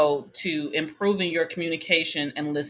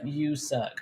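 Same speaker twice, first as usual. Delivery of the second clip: mock harsh tone, dropped bluntly; 2 semitones lower, 6 dB quieter than usual. Retelling his words that hurt feelings: imitating a harsh put-down. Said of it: "just crush a person's spirit".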